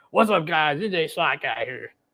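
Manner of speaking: high, stuffed-up, nasal voice. Pressed by a friend to do his voice, attempting a nasal Slack Guy impression. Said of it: "with a sinus infection is what you're doing".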